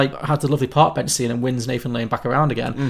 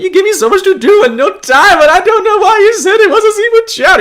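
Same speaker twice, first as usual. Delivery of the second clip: put-on crying character voice, higher and louder; 9 dB louder than usual. Retelling a film scene where Agador Spartacus complains: imitating Agador Spartacus crying. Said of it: "Agador Spartacus is, like, crying".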